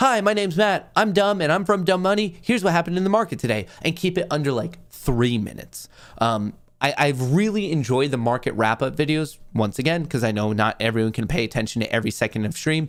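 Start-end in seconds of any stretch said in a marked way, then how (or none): 0.0-3.7 very high-pitched, very fast rapid-fire patter. Showing viewers what a rushed market wrap-up would sound like, speaking very quickly. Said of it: "like me speaking very quickly".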